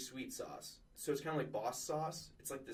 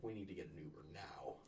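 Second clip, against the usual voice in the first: mock very low, dead-flat deadpan delivery; 7 semitones lower, 10 dB quieter than usual. Retelling telling friends at a club to leave: imitating own deadpan line. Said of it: "I just deadpan stare at them and say".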